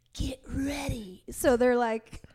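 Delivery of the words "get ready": put-on whisper, higher. Retelling a spotter's warning across the platform: imitating a whisper. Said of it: "whispers across the platform".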